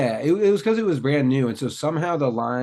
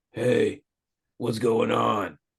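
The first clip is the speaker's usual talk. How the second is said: put-on deep voice, pushed low and heavy; 3 semitones lower than usual. Retelling how a boy sounded after his voice changed, imitating a deeper voice. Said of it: "Isn't his voice deeper?".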